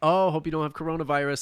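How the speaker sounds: plain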